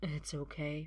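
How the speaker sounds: weary voice. Arthur answers an apology about his dad, tired. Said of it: "Arthur says tiredly".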